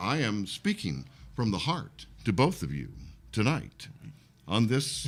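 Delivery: mock broadcast announcer delivery. Speaking to the other two on the show, in a radio voice. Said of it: "why you giving us your radio voice".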